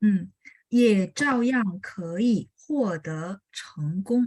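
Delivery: slow, deliberate, careful model reading.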